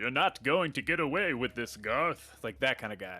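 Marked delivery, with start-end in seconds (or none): 0.0-2.4 cool, composed, self-assured leading-man delivery. Imitating a TV doctor character to a co-host: imitating the cool doctor from Dark Place. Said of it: "How does he go? He's like".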